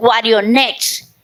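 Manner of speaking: Guarionex, hard explosive punch on final syllable -nex. Explaining native names ending in explosive stress: Guarionex with forceful final stress. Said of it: "explosivo al final".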